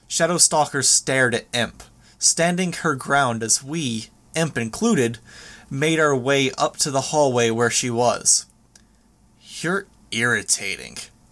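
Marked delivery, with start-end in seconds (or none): 9.6-11.0 low, dismissive voice dripping with condescension. Narrator reads Shadowstalker's remark to Imp, dripping with condescension. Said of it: "her voice dripping with condescension".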